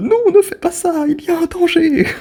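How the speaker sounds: overdone, high-pitched pleading yell. Imitating a mother warning a film character through the tv: imitating mom shouting at tv. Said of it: "à ma daronne qui, qui parle à la télé".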